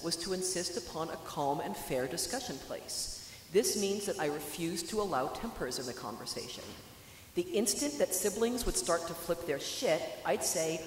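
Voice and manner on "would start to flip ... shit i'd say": ordinary talk, nothing marked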